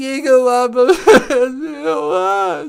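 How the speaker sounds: sobbing, crying, tearful voice.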